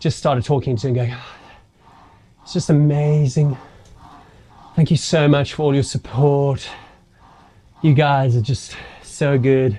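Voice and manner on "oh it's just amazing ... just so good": slow, out-of-it, drifting, dazed babble. Retelling own past words after the race: imitating own dazed rambling. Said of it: "Completely out of it".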